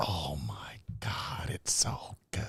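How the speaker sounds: barely voiced, very soft, breathy whisper. Talking about a woman's little habits, the speaker imitates her: whispered imitation of her. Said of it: "'cause she whispers like that".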